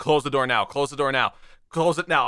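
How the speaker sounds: ordinary talk, nothing marked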